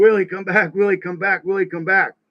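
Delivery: high-pitched, repeated screaming. Retelling holding someone's body and calling him back: imitating own screaming. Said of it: "I was screaming".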